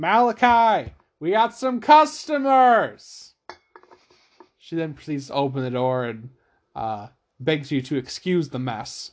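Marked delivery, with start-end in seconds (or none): 0.0-3.3 very loud, high-pitched yell. Voicing a woman at the door announcing customers: yelling. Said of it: "she turns and yells".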